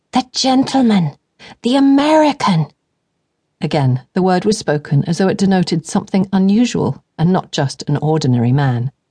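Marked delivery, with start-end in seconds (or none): 0.1-2.6 higher, slower, excited, giggly, insistent whisper. A flighty younger sister eagerly quizzes her sibling about a man, urging her to look. Excited, giggly, insistent whisper. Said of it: "She gives no further thought to the prospect of love until her flighty sister [name] begs her to act as her chaperone in place of their ailing parents. ... Her voice was sharp, but at least she had bothered to whisper".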